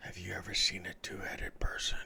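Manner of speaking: breathy whisper, like an aside. A character glances over, then asks another character a question in a whisper. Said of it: "he kind of whispers it towards Arden".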